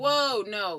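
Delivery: startled, alarmed, loud blurted exclamation.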